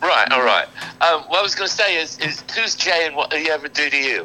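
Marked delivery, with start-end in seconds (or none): 2.2-4.3 fake British accent, higher pitch. Asking a band member a question after being asked: put-on British accent. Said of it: "please say it in the British accent".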